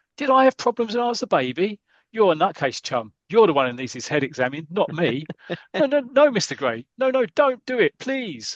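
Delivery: stagey, mild half-shouted rant at high pitch. Telling a story of a man's visit to a psychiatrist, retelling someone shouting. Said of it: "and he's shouting".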